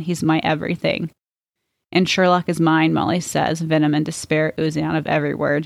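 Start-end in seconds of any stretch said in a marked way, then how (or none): none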